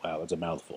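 softly whispered, snarky aside.

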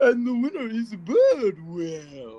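haughty, very slow, loud, drawn-out posh British. Recalling a judge on the show announcing the winner: judge's snooty British voice. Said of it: "Just the classic snooty British voice".

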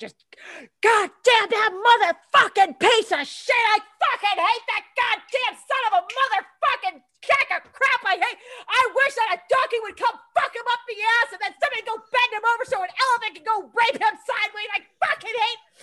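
mock, high, furious, raging torrent of curses. Retelling letting loose about a team lead, re-enacting a furious rant. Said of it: "And I'm fucking raging".

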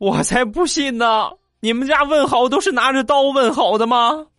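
put-on very high, near-tears sobbing voice. Retelling what a chased classmate said on turning back, imitating a crying voice. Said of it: "带着哭腔就说".

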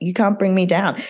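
ordinary talk, nothing marked

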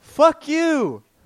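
high-pitched shout. Retelling what a driver yelled from a car: imitating a driver yelling. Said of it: "Guy yelled the classic".

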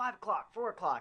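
yelling, pitched high.

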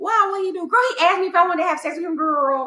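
put-on loud, very high, gossipy girl voice. Speaker acts out the girls reacting to a guy asking consent, imitating how girls talk. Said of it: "that's how the girls talk".

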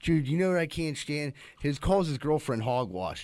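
ordinary talk, nothing marked

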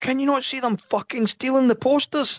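play-acted, shrill, high-pitched shout. Retelling shouting to someone across the hall, retelling a shout. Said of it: "And I'm shouting to John".

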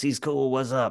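cool, hip DJ voice. Describing the app's AI DJ, imitating how he talks: hip AI DJ voice. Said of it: "a guy that kind of talks like this".

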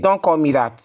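normal talking voice

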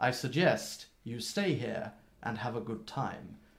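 mock pointed, heavy, meaningful emphasis. Recounting a scene, acting out his line very significantly. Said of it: "he's saying it very significantly".

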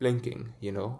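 plain

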